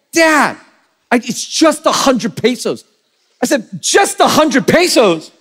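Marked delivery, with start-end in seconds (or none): 0.2-2.9 put-on angry voice, higher pitch. A father retells his daughter getting angry when he asked what for: imitating angry daughter. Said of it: "she gets angry at me for inquiring".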